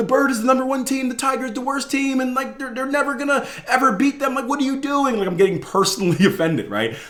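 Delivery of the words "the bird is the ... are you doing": high-pitched, frantic, freaking-out voice. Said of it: "And I'm freaking out".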